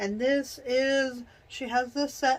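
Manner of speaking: words stretched by yawning. Going through a list of entries, the speaker talks while yawning. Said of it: "I'm yawning today".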